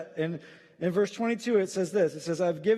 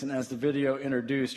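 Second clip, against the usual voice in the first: ordinary delivery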